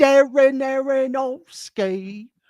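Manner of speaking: very high, loud put-on British accent. Saying a film director's name just for fun, in a put-on british accent. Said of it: "fun to say in a British accent".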